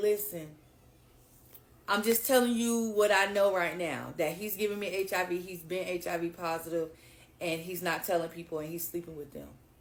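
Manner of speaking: ordinary talk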